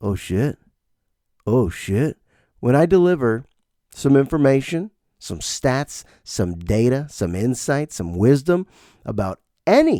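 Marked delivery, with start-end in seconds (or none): 0.0-2.2 slow, quiet mutter under the breath. Retelling how a student reacts in class: imitating someone muttering under breath. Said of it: "he says under his breath".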